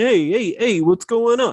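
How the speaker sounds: put-on high-pitched Brooklyn accent. Imitating a TV robot character: imitating Alpha Six's Brooklyn accent. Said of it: "this Brooklyn accent".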